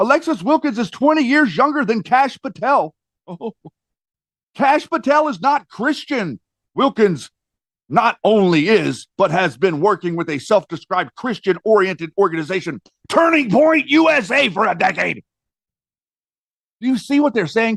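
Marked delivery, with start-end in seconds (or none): 0.0-15.2 mock outraged, indignant delivery. Speaker relaying others' claims about two public figures, in mock outrage. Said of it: "I'm saying it like that so you can see the faux outrage".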